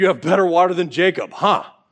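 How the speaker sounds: mock snarky, sarcastic delivery. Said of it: "Probably a little bit snarky, a little bit sarcastic".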